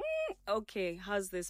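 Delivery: ordinary delivery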